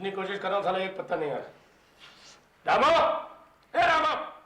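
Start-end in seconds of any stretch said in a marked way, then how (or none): 2.7-4.1 shouting, much higher, louder, slower. Calling out to Ramo to bring ice, shouting. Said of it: "चिल्ला क्यों रहा है".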